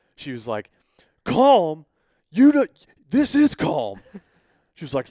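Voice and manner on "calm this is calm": put-on anger, higher, louder, slower. Retelling how she reacted when told to calm down, mock-angry retort. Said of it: "she got pissed when I said that".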